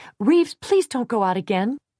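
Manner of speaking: high-pitched, tense cry. Reading a story, a character cries out to another in a high, tense voice. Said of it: "cried in a high, tense voice".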